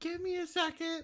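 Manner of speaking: very high, faint, distant woman's voice. Retelling a woman answering from upstairs, faint female voice. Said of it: "I'm trying to do faint plus female voice at the same time".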